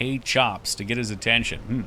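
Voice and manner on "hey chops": ordinary delivery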